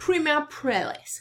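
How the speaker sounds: put-on English accent. Speaker repeats a foreign name for the day, now in an English accent. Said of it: "or with an English accent".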